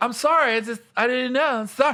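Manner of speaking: sheepish, meek voice. Retelling how the scolded girl answered: imitating a clueless meek apology.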